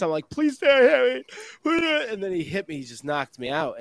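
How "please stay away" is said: put-on high, babyish, blubbering, sobbing crying voice. Retelling begging the man who hit him to stay away, blubbering like a baby. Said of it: "I was like blubbering like a baby".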